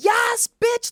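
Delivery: very high-pitched screaming. Retelling people behind her cheering at a fashion show: imitating people screaming. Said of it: "start screaming".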